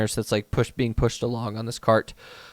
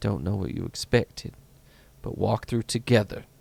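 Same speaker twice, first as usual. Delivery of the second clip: hushed half-whisper, close to the ear; 2 semitones lower, 4 dB quieter than usual. Voicing a character who leans in close to a companion's ear: half-whispering in character. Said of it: "she literally whispers in your ear".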